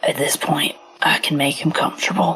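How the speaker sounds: very quiet, low whisper. In a game, the player voices the doc speaking about a patient: really low whisper. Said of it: "in a really low whisper".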